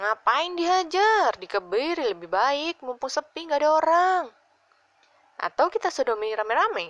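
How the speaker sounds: loud, sing-song, playful teasing. The narrator's friends egg him on against a scared guy: teasing. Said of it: "yang sebetulnya hanya menggoda".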